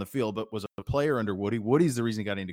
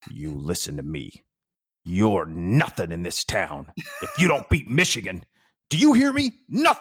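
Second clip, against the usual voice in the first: loud, rising, menacing voice, acted out; 3 semitones lower, 5 dB louder than usual. Retelling how Earle looked into the camera at the end of the show: menacing Earle impression. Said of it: "just menacing and say".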